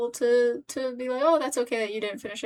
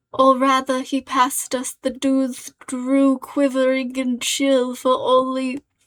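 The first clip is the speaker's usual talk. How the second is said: loud, clear, put-on British accent; 7 dB louder than usual. Reading aloud a line by a writer they like, in a British accent. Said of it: "I don't know why I'm doing a British accent".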